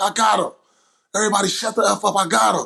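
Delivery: heated, angry yell, pitched high. Retelling a timeout in a game, imitating own yell at teammates. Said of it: "I yelled at everybody".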